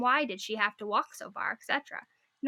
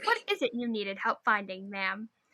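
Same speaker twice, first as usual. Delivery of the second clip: mock voice with veiled hostility; 3 semitones lower than usual. Speaker retells asking a woman what she needed, acting out a veiled-hostility voice. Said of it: "I really don't hope you're run over by a stray water buffalo voice".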